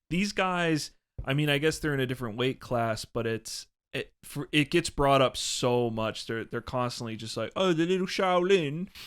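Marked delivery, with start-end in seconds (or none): 7.5-8.9 high, loud, terrible mock British accent. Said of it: "Me and Matt were doing a Br-, British accent".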